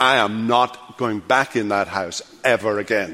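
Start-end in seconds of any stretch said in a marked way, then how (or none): none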